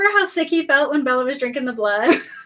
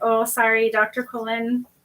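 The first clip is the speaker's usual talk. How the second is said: put-on sheepish apologetic voice, lower and quieter; 5 semitones lower, 6 dB quieter than usual. Imitating Jacob turning sheepish when he sees Carlisle. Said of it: "the second he sees Carlisle, it's gone".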